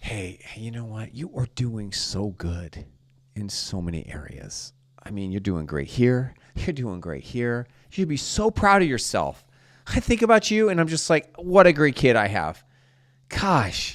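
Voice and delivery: loving, gentle, sweet encouraging tone. Parent showing how to praise their kid more gently: soft smiling tone. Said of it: "say the same thing in a little bit different tone".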